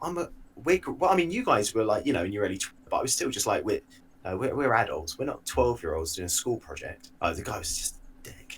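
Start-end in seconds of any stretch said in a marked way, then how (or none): none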